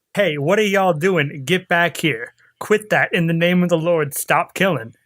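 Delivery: plain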